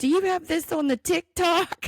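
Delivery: high, loud, upset, alarmed voice.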